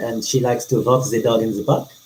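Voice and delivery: funky French accent. Asked to say a sentence in a funky accent, voicing a character: Captain Abrielle Frost's French accent. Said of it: "She is my French tabaxi captain".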